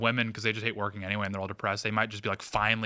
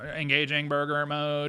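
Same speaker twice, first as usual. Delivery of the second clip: put-on robot voice; 5 semitones higher than usual. Joking about a post-apocalypse burger robot, answering in a robot voice. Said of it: "just talk like a robot".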